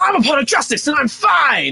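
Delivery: shouting loudly. Leading a voice workout before a trial, going first: loud shout. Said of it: "shouting "I'm fine" in a loud voice".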